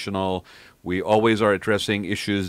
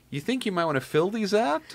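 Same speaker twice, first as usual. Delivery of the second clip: put-on, very high, swooping, totally sarcastic tone; 12 semitones higher, 3 dB quieter than usual. Retelling what a woman said to the speaker, imitating her sarcastic remark. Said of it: "she was being totally sarcastic".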